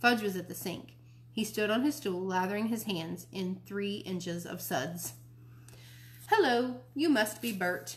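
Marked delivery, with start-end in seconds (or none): 6.3-8.0 put-on children's TV puppet character voice. Narrating a child at the sink greeting the narrator, in his Sesame Street voice. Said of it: "he said in his Sesame Street voice".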